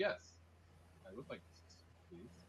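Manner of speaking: gentle, soft, breathy, calm near-whisper. In a role-play scene as guards appear, soft-spoken and calm. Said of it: "I am very soft spoken and calm".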